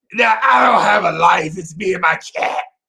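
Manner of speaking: crackly woman's voice. Retelling Martha's reply to a joke: imitating Martha's crackly voice. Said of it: "And she was like".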